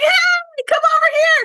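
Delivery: very high, loud shout. Showing how loud forte is, yelling to a friend: yelling to a friend. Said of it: "yelling to your friend".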